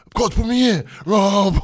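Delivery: shrill, very high, very loud, drawn-out scream. Retelling his son on the sideline, screaming to the coach: imitating son screaming. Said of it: "He's screaming".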